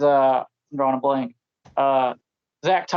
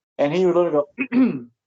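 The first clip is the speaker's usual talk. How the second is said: plain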